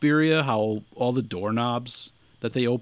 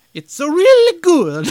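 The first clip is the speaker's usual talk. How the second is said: put-on, very high-pitched Italian accent; 9 dB louder than usual. Podcast host chatting with a co-host about horror films, in a put-on accent. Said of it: "I'm going to stop with the accent".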